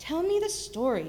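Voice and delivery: firm, insistent tone. Fenchurch answers him, speaking firmly. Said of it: "said Fenchurch firmly".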